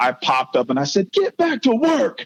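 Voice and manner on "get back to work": put-on pumped-up, fired-up cry, very high pitch. Speaker retells popping up after falling down the stairs, retelling fired-up words. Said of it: "I was so fired up".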